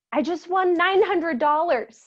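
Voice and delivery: mock high, loud shout. Retelling a phone call where the grandmother shouts into the phone: imitating grandma shouting. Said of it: "she shouts into the phone".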